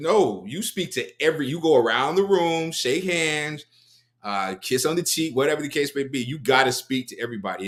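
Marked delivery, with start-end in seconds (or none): none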